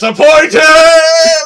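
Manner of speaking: sudden, very high, very loud, shrill, booming yell. Retelling a moment where an actor yells: imitating a yell of "Disappointed". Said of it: "where he just yells".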